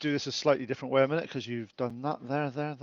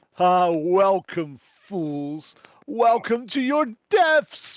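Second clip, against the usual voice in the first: big, menacing, scary voice pitched high; 5 semitones higher than usual. As the players go down, voice what greets them in a large, scary voice. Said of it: "a large, scary voice goes".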